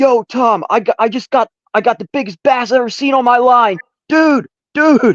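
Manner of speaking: shrill, very high, full-volume holler. Retelling catching a huge bass, imitating yelling to a buddy. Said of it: "yelling to my buddy".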